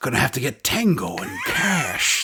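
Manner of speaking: sucked-in breath noise, then slow drawn-out drawl. Showing how a Jack Palance impression starts: Jack Palance impression. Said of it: "with Jack Palance, it's that".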